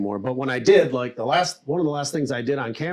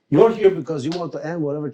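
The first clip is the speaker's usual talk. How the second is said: put-on Puerto Rican accent; 3 semitones higher, 4 dB louder than usual. Actor recalling reading for the role of Chico Fernandez, in a Puerto Rican accent. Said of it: "So I start doing an accent like this".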